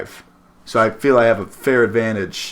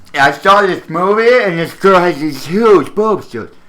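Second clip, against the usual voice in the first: high, loud, put-on nerdy voice; 9 semitones higher, 6 dB louder than usual. Chewing gum, the speaker does the nerd voice for the others. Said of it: "nerd voice".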